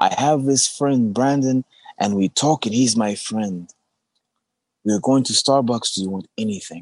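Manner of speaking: put-on old man voice.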